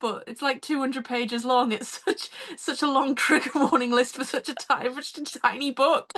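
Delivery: speaking while fighting off a laugh. Reacting to a very long trigger warning list: trying not to laugh. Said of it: "I'm trying not to laugh".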